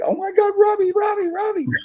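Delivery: put-on very high-pitched kid voice, freaked-out and losing it. Retelling a kid waking up at the driveway gate, imitating a kid freaking out. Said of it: "he starts freaking out".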